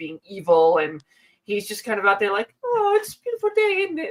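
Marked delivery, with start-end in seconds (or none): 2.6-4.0 carefree Cockney British skeleton voice, higher. Voicing a carefree skeleton who watches butterflies: Cockney carefree skeleton voice. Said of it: "like, Cockney, uh, just, like, carefree British skeleton".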